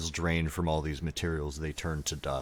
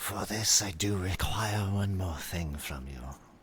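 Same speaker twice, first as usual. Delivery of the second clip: higher-pitched voice with hissing, clacking stutter; 3 semitones higher than usual. Voicing a creature who asks a player for one more thing: hissing, clacking stutter. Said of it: "She kinda hisses in a clacking stutter".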